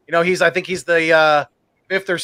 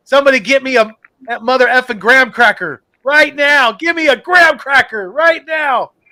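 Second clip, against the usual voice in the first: put-on high, drawn-out excited scream; 7 semitones higher, 4 dB louder than usual. Retelling own reaction to the strip sack: retelling own screaming. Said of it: "I was screaming".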